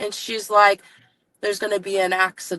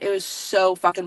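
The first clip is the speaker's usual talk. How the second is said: plain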